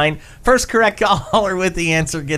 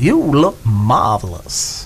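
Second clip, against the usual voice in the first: low, swooping put-on voice; 5 semitones lower than usual. Giving a hint for the morning Brain Teaser, do your best Billy Crystal impersonation. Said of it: "My best Billy Crystal impersonation".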